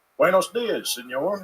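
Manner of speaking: Spanish spoken in Eastern Kentucky accent. Showing how Spanish sounds from the speaker: Spanish in Eastern Kentucky accent. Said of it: "sounds like a hate crime coming out of".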